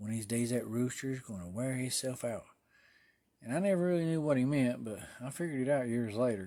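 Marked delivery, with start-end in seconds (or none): 0.0-2.5 put-on muttering under breath. Retelling what an old man would say: imitating muttering under breath. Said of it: "he'd mutter under his breath".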